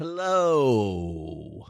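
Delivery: words stretched out long, comedian sitcom style. Saying hello after being introduced: Seinfeld voice. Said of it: "a little bit like the Seinfeld voice".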